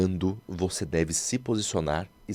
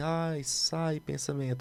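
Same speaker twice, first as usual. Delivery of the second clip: feeble, faint, fading, dying voice, very high; 10 semitones higher, 5 dB quieter than usual. Showing how not to voice a thought, weak, dying voice. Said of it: "aquela voz assim, morrendo".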